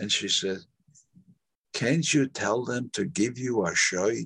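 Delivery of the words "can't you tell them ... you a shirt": put-on heavy Yiddish accent, higher pitch. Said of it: "now she had this heavy Yiddish accent".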